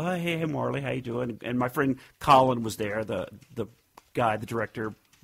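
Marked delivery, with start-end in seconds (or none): none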